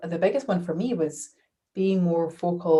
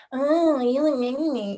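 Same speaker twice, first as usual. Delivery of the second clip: silliest mocking voice, high, very drawn out; 8 semitones higher, 4 dB louder than usual. Explaining how to defuse a hurtful remark, the speaker replays it in the most ridiculous voice possible. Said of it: "Imagine them saying that thing in the most ridiculous voice possible".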